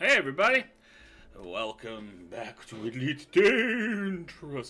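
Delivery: spooky put-on voice. Streamer welcoming everybody back to elite dangerous, in a scary voice. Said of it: "I'm doing the scary voice".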